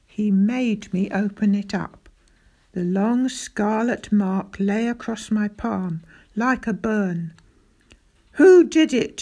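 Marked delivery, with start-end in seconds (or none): 8.4-9.2 high, very loud, demanding shout. A father gripping his child's wrist after seeing a mark, shouted. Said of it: "he shouted".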